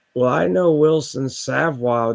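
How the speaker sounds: put-on sloppy, slurred, boozy drunken voice. Retelling telling a cop he knows wilson savoy, imitating a drunken voice. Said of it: "like with a drunken voice".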